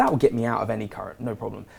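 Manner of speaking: normal talking voice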